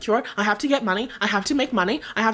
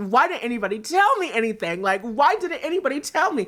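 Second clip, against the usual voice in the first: mock speech broken up by laughter throughout. Retelling asking why nobody told them: retelling laughing while talking. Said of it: "laughing with my guys".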